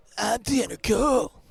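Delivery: high-pitched, loud and scratchy voice. Answering back with an impression of the other player: Tanner impression. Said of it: "Here's one of you".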